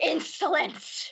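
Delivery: high-pitched hissing giant serpent voice. Voicing a creature that hisses at the players, in a hissing creature voice. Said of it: "she hisses as you say that".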